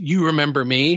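normal talking voice

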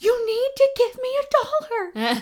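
play-acted very high, urgent, freaked-out, panicked insistence. Retelling waking someone up and demanding something, acting out freaking out. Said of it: "So I'm freaking out".

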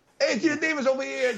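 put-on Brooklyn accent. Joking about the lead's role in a Brooklyn film: Brooklyn accent. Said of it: "with the Brooklyn accent".

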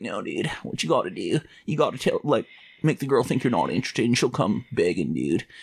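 annoying, know-it-all dude-bro voice. Recalling an annoying high school friend's dating tips, imitating that friend's voice. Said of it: "that's how that kid sounded".

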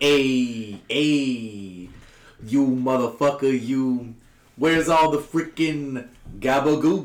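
"hey" drawn out, each said very slowly. Retelling a meme's Mario voice: Joe Pesci voice. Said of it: "Just Joe Pesci".

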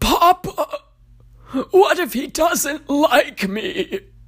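croaky, strained, very high cry. Reading a story, a voice in the darkness calls to papa, croaking voice. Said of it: "croaks one".

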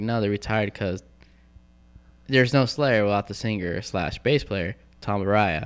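ordinary delivery

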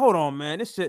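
plain

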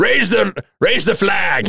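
very high, thrilled, eager, excited delivery. As the ship approaches the docks, Philophus gives an order, very excited. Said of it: "very excitedly like getting pretty much almost out of his seat".

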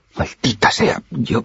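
high, stammering, stumbling, broken-off words. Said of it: "balbuceó".

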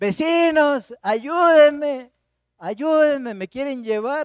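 acted, high, loud, drawn-out pleading yell. Recounting what he and his wife heard one night, retell a yelled cry for help. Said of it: "se oye raro su".

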